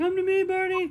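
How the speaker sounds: very high, very loud squeal. Voicing a character who chases a little bird: high-pitched squeal. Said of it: "squeals in a high pitched voice".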